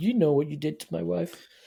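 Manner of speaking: faintly sneering delivery. Acting out how the hero should confront the bad guy: slightly sneering. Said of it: "slightly sneering at the bad guy".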